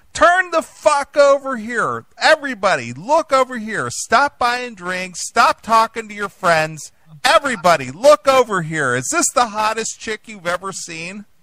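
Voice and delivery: put-on very high, loud screaming. Reminding someone how they screamed at the club over the microphone, imitating someone screaming. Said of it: "you were literally screaming at the club over the microphone".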